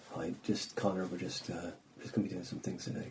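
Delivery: hushed, barely audible, low, very quiet murmur. Mocking how managers talk: imitating low-volume management talk. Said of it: "that low volume management, uh, talk".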